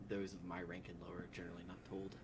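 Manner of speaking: ordinary talk, nothing marked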